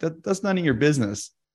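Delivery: put-on irritated fatherly voice, annoyed and dismissive. Retelling a story where a dad answers his son: imitating an annoyed dad. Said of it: "kind of annoyed".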